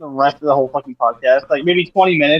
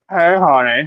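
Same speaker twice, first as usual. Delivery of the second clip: funny, silly, put-on female voice. Showing how the game voices its women characters: funny put-on women's voice. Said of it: "it's gonna be a fucking funny ass voice".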